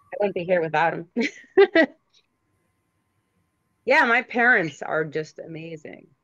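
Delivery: emotional, moved voice. Asked what she is most grateful for, she talks about her parents, emotional. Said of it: "Sorry, it's very emotional".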